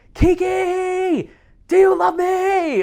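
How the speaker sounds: very high, very slow, lung-busting scream. Retelling a call where a naked man rolled on the ground: imitating a man screaming. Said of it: "he was just screaming".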